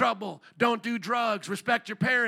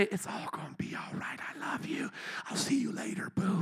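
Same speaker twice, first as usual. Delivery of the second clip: very quiet, hushed, close whisper; 3 semitones lower, 8 dB quieter than usual. Acting out what Jesus should have said to the healed man, whispering. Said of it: "whisper in his ear and say".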